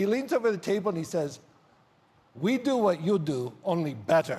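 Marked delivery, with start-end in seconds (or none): 2.4-4.4 bad, slow put-on Polish accent. Retelling what Emilian said, leaning over the restaurant table, in Emilian's Polish accent. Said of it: "I'm going to do his Polish accent".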